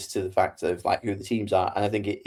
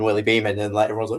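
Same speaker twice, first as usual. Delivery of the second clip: ordinary talk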